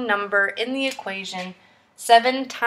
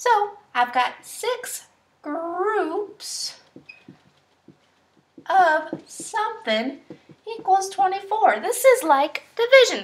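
high, kids' cartoon mouse character voice; 8 semitones higher than usual. Explaining a multiplication example to viewers, in a Mickey Mouse voice. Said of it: "I'm gonna try to talk like Mickey Mouse".

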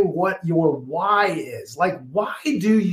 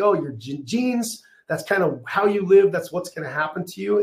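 normal talking voice

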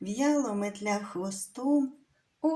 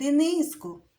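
raised, high-pitched calling out; 5 semitones higher, 6 dB louder than usual. Grandmother, out of oil while frying pancakes, is calling out to the boy. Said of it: "покликала бабуня".

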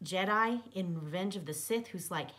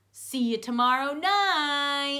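very loud, very slow, fake-friendly cheer; 7 semitones higher, 10 dB louder than usual. A character calls after the narrator as he takes off, in a fake friendly voice. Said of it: "in a fake friendly voice".

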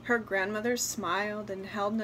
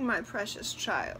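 usual speaking voice

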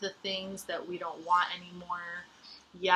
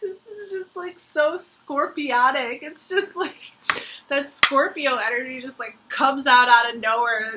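laughing while talking, higher, louder; 7 semitones higher, 8 dB louder than usual. Speaker talks about Scorpio energy in the reading, laughing while talking. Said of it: "I'm sorry that I'm laughing".

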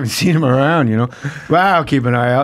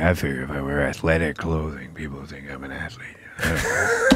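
very low, flat, deep, sleepy voice; 11 semitones lower, 11 dB quieter than usual. Showing how Norm talks when he gets real tired, imitating Norm's sleepy, tired voice. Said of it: "He gets like that sleepy voice".

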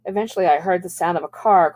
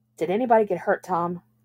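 usual speaking voice

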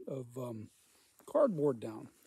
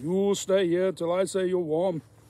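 put-on loud, booming Austrian-accented action-hero voice. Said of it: "I sound like Schwarzenegger".

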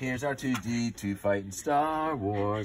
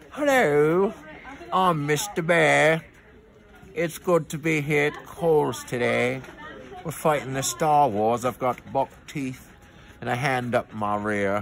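loud, big, silly put-on puppet voice; 3 semitones higher, 6 dB louder than usual. Speaker gives a bear puppet a voice for a show at Kohl's, Mr. Bear puppet voice. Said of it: "Should I give him a voice?".

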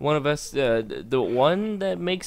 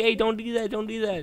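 mock frantic, panicky, pitched-up voice; 7 semitones higher than usual. Retelling how the other player panicked while building: imitating someone panicking. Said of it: "you were, like, panicking".

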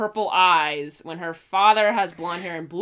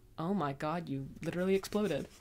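put-on dead flat deadpan, very quiet; 13 dB quieter than usual. Sharing a favorite line from the volume, quoting Yang, mock-deadpan.

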